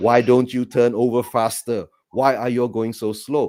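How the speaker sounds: mild, restrained, half-voiced shout. Retelling a watch-along reaction to slow play: reenacting shouting at the screen. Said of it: "I was shouting at, at the screen".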